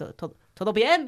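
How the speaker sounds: strange put-on Russian accent, halting start. Retelling a film scene where a russian asks if everything's fine: strange russian accent. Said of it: "así como en un acento ruso raro".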